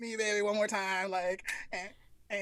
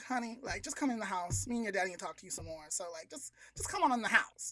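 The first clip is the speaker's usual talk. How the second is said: soft, made-up, put-on motherly voice; 6 dB quieter than usual. Retelling a story, the speaker quotes what the mom said: put-on mom voice. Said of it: "I don't know where that voice came from".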